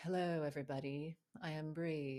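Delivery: dull, boring professional presenter voice. Speaker showing how they'd greet a workshop as a professional: put-on professional teacher voice. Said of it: "notice how my voice changes".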